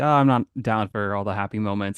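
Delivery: ordinary delivery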